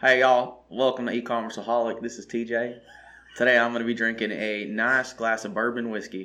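put-on southern US accent. Describing a podcast host from Alabama, doing TJ's Southern accent impression. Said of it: "That was me emulating it".

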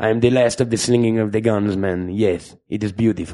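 put-on Latin accent in actor's voice. Mocking how the actor would sound in the role: imitating the actor's Latin accent. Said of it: "but it's gonna be like".

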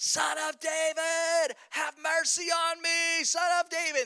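mock, very high, drawn-out desperate crying out. Retelling a blind man calling out to Jesus from the roadside: imitating someone screaming. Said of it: "he is screaming at the top of his lungs".

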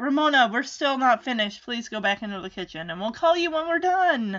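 normal talking voice

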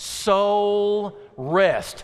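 very slow, unhurried, deliberate, drawn out on soul. Speaker asks the audience to say it with him, saying it slowly. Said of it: "I want you to say it slow".

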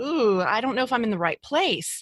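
ordinary talk

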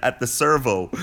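plain

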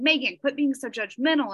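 normal talking voice

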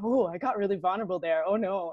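acted-out panicky voice. Acting out own hindsight thoughts about getting vulnerable: acting out own panic. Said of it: "And I'm kind of panicking".

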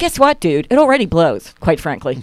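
ordinary talk

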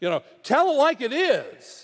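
many voices yelling, high and loud. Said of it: "They started yelling".

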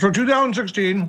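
talking with mouth full, chewing. Starting a story while still eating, chewing while talking. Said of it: "you can finish chewing your food".

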